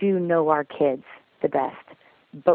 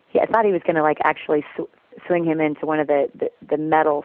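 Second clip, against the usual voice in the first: ordinary talk, nothing marked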